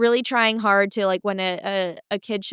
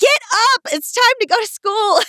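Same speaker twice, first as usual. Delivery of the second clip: mock scolding holler, shrill and very high-pitched; 13 semitones higher, 4 dB louder than usual. Retelling mom waking the speaker for school: imitating mom yelling. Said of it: "start yelling at me and be like".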